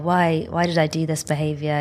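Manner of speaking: ordinary delivery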